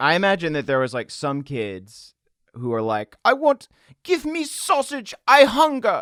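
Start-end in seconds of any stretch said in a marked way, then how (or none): 3.2-6.0 very high, loud put-on German child's accent. Imagining what hungry children would say: mock german accent. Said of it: "why are they German?".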